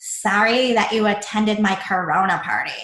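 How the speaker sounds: mock valley-girl way of talking. Quoting a woman's text to coworkers about her party, in a Valley girl voice. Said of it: "That was just the voice I was making".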